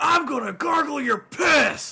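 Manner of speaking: shrill, booming wrestler-style delivery, belted high and slow. Retelling what MJF says on Dynamite: imitating MJF. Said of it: "When he goes".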